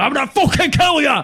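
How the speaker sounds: acted, very high, loud, shrill, raging furious screech. Retelling how a man in Birmingham threatened the speaker: imitating a man screaming angrily. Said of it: "he just started screaming".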